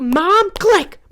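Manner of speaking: shrill, very high, loud screaming yell. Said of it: "I'm screaming at the girl".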